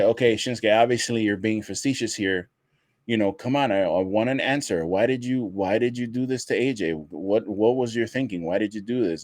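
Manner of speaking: ordinary talk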